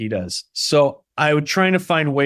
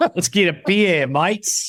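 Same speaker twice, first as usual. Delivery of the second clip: overdone, silly Australian accent, high and slow; 6 semitones higher than usual. Showing the silly version of how Australians talk: exaggerated Australian accent. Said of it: "It's like the silly version of it".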